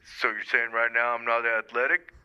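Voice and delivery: put-on voice dropped very deep. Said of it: "do we have [name] calling into the program".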